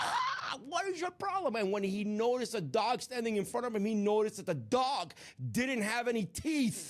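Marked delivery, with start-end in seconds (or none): 0.0-1.6 very high, swooping, exasperated, fed-up scream. Retelling how a jogger turned around and screamed at a chasing dog: imitating a scream at a dog. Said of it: "he screamed at the dog like".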